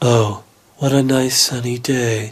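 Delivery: very low, dead-level, rangeless machine monotone. Showing that Hal has no range when told to be happy: HAL monotone impression. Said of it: "that monotone tone of voice".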